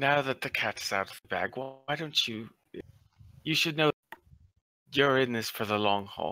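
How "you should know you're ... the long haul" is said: put-on Imperial-sounding accent. Deciding to talk in the Imperial voice: put-on Imperial accent. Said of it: "I'm gonna go ahead and talk in the Imperial voice".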